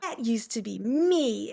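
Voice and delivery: mock, slow, disgusted, scornful sneer. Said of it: "she would say it with this".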